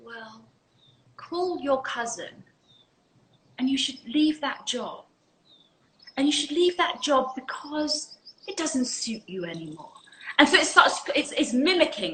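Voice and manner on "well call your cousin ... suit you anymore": soft, gentle, repetitive tone. Showing how the ego starts to speak to you, in a gentle, repetitive voice. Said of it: "that gentle, repetitive voice, the ego is now starting to speak like this".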